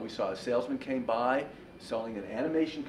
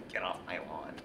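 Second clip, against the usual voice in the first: fake cranky old man voice, lower, quieter; 7 semitones lower, 6 dB quieter than usual. Explaining a rejected title for his talk, speaker does a put-on cranky old man voice. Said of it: "I sounded like a cranky old man going".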